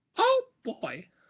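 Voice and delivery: very slow, swooping, terrible cartoon mouse voice. Speaker filming a video tries out a voice: terrible Mickey Mouse impression. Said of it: "that was a terrible Mickey impression".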